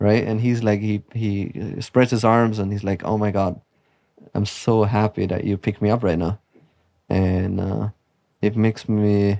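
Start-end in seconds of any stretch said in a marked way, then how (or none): 3.0-6.4 acted-out overjoyed, delighted voice. Speaker retelling dad's reaction when picked up, imitating overjoyed dad. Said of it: "He has so so much joy in his eyes".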